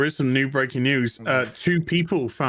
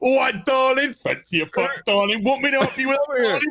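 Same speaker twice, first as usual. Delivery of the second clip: crude, leering, very high-pitched calling voice; 12 semitones higher than usual. Describing a film scene where men line the street, imitating catcalling men. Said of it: "Every fucking one of them is going".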